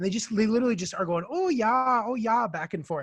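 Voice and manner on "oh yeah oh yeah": put-on high, drawn-out, singsong North Dakota accent, "oh yeah" stretched. Retelling the sisters going back and forth, imitating a Fargo-style accent. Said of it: "straight out of Fargo".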